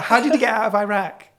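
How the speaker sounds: put-on American accent. Telling a joke about the word Iran: American accent. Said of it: "you have to use the American accent".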